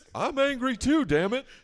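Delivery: drawling TV-doctor voice. Playing a TV doctor during a fight scene: Doctor Phil voice. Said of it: "Why do I sound like the guy from King of the Hill?".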